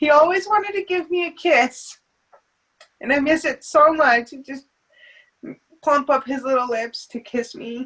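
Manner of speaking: choking up, on the verge of crying. A mother remembering how her son always wanted to kiss her, choking up, near tears. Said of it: "Oh, I'm gonna cry".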